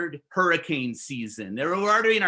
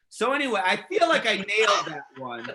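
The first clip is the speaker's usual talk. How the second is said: normal talking voice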